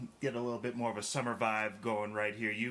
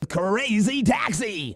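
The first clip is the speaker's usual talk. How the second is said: shrill, booming, very loud, high announcer hype shout; 10 semitones higher, 13 dB louder than usual. Asked to do the voice, a host announces the other's game in the Crazy Taxi announcer voice. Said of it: "do the voice".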